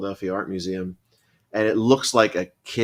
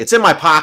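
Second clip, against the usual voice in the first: very loud, high, sarcastic voice; 7 semitones higher, 9 dB louder than usual. Retelling what a mom always answered when asked for something: imitating a sarcastic reply. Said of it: "So sarcastic".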